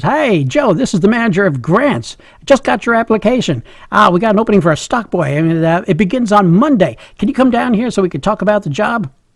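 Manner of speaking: put-on cheerful, upbeat, jolly, hearty voice. Retelling a phone call from the manager, imitating a jolly voice. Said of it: "a jolly voice on the other end says".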